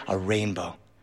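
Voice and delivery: very quiet half-whisper, just loud enough to carry. Retelling spotting a rainbow during a car fight: half-whispering. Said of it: "I whisper just loud enough".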